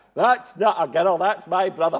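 shrill, high, full-volume shouting. Recalling a first theatre memory, quoting the speaker's sister, retelling a shouted reply. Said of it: "my sister shouted back".

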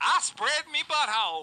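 slow, high-pitched, put-on Southern drawl. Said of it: "you can say that so South".

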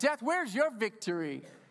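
scornful, sarcastic, jeering tone. Quoting the verse to death as a taunt: sarcastic, making fun of death. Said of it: "That's like sarcastic making fun of death".

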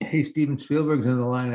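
ordinary delivery

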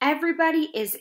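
ordinary delivery, nothing marked

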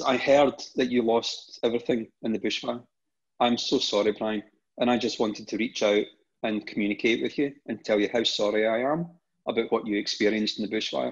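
normal talking voice

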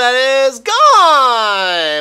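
very loud, very high, cracking yell. Commentating a ballgame as a home run goes out, voice cracking. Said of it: "Voice crack".

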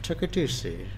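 failed put-on British accent. Asked to say something in British, trying a bad fake British accent. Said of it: "Sounded pretty racist to Indians".

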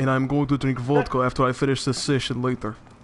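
good Russian accent with a put-on timbre.

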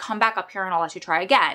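ordinary talk

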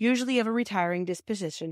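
ordinary delivery

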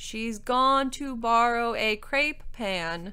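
loud, very slow, spelled-out delivery. Simmering repeats the words to the knight in a louder voice. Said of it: "Simmering repeated in a louder voice".

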